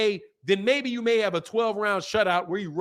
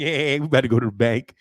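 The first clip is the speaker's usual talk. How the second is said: deep, very low voice with giggles running through; 7 semitones lower, 4 dB louder than usual. Mocking people who talk about an upcoming fight: imitating giggling. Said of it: "They're literally giggling about it".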